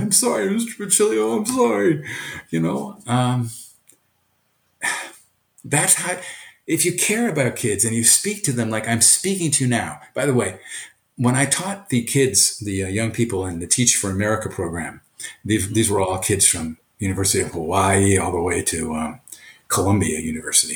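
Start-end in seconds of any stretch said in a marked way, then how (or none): 0.0-2.0 high-pitched, tearful delivery. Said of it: "kids break out in tears and say".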